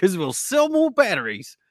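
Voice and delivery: put-on botched, terrible Australian accent, very high pitched. Answering why someone would do that: terrible Australian accent. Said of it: "That was a terrible Australian accent".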